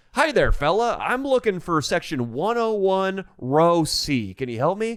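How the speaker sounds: put-on cheerful upbeat voice. Retelling how a father asked an attendant for help: imitating dad in a positive mood. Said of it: "at first he starts off in a positive mood".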